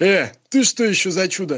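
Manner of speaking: deep, heavy, mighty bass of a hulking tough. Telling a joke, voicing a man on a bench in a mighty booming bass. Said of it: "мужик могучим басом".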